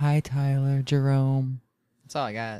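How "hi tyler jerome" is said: awkward, failed attempt at a sultry, sexy voice. Asked by a co-host for a sexy voice, greeting someone in an attempted sexy voice. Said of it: "I can't do a sexy voice".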